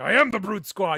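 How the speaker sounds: growly, very loud bellow. Imagining a wrestler cast as a giant, yelling: growly yelling Big Show voice. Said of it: "he's got that growly voice where he's like, I could see him when he's yelling".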